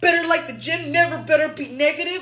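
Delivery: put-on demanding voice, yelling. Reading out men's dating app bios: imitating men yelling in dating bios. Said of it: "why are you yelling through the bio".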